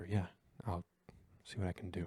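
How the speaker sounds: whispered, barely voiced, very quiet. Holding a hurt companion's head to your shoulder, whispering in character. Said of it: "I just whisper".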